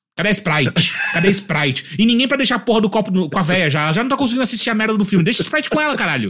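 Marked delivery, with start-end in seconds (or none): 0.2-2.0 put-on slow, insistent, nagging old woman's voice. Retelling an old woman in the cinema asking for her Sprite: imitating an old woman demanding. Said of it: "e ela ficava pedindo também Sprite".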